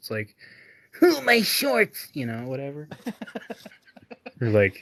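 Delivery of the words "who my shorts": very high, loud, shouted cartoon voice. Speaker admits his impressions aren't perfect, then tries one: Bart Simpson impression. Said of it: "I can't do Bart either".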